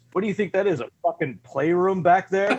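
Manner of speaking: put-on yelling. Retelling a scene where a character yells at someone who brought something in: imitating someone yelling. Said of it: "he starts yelling at Georgie".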